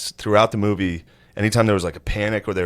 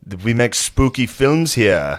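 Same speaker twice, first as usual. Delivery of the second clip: put-on villainous voice with Russian accent; 3 semitones higher, 4 dB louder than usual. Retelling a film scene, imitating a Russian nihilist villain. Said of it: "He's a nihilist, like".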